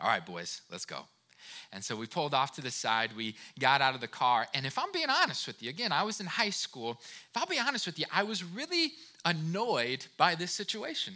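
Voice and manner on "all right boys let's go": very low, soft, dropped fatherly voice. Retelling how his dad pulled over to help a stranded driver, in a deep dad voice. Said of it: "in his kind of deep dad voice".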